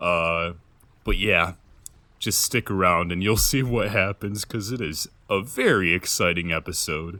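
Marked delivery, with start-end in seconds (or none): 2.2-7.2 heavy, dripping sarcasm, very sarcastic hyped delivery. Telling viewers to stick around for the episode: sarcastic. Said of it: "I'm being very sarcastic right now".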